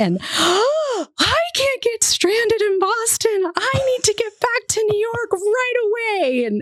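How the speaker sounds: put-on very high frantic panic, stretched-out "I". Retelling pandemonium erupting from the back of a vehicle, imitating a panicked passenger. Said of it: "erupts pandemonium".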